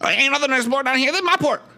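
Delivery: man's character voice. Voicing a thin, barefoot man who bursts from the boathouse: in-character port owner. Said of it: "And he says".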